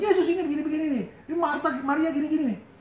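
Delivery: high, fast, mocking, whiny complaining tone.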